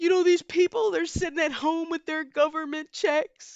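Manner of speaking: a weepy, tearful, high-pitched crying voice. Retelling what a hedge fund manager said on TV: imitating a crying hedge fund manager. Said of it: "a hedge fund manager was literally crying on T V like".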